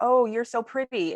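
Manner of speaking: high, play-acted astonished, surprised tone. Quoting what people say to you, mock-surprised compliment. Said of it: "in this surprised voice".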